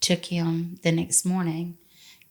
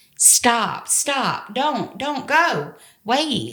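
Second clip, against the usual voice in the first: put-on high, very slow, stretched-out screaming; 7 semitones higher, 3 dB louder than usual. Recalling a phone call as he drove away, reenacting her own screaming. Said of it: "I remember screaming on that phone".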